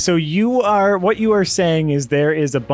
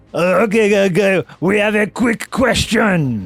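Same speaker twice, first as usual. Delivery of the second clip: put-on French accent, higher pitch; 4 semitones higher than usual. Voicing a guard inside who questions the thieves: French accent. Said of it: "this is not the accent that I did last week, but it's French now".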